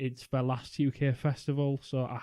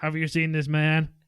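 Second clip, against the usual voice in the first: put-on robotic killer voice, louder; 3 semitones higher, 5 dB louder than usual. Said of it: "I never said I was good at impressions".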